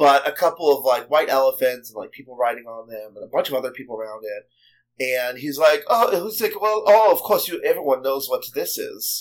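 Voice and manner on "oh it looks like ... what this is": put-on German accent. Speaker acts out what a man said about a brief sighting, in a put-on German accent. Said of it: "This is more German accent".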